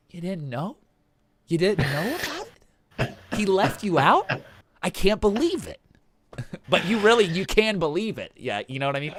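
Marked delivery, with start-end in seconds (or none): 0.1-8.3 put-on sarcastic disbelief, higher and slower. Acting out how the listener reacts when someone else was left out, mock-sarcastic disbelief. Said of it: "It's like sarcasm kind of".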